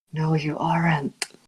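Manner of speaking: whispering. A player speaks as their character in a game, whispering. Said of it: "And then Caspian whispers".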